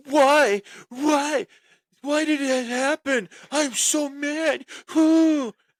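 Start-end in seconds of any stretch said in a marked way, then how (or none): 0.1-4.6 put-on very high, very slow, drawn-out sobbing whine. Retelling how a wrestling partner reacted in the back: imitating someone whining and crying. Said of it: "he's whining, and he's crying".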